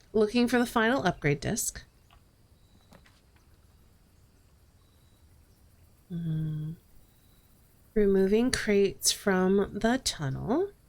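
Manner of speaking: hushed, whispering voice. Listing goals for the next in-game day while whispering. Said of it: "I don't know why I'm whispering".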